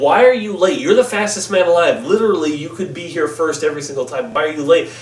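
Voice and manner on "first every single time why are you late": normal talking voice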